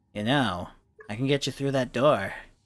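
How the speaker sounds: put-on goblin creature voice. Speaking as a goblin tugging at Raven's cloak in the dungeon, goblin voice. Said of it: "goblin who".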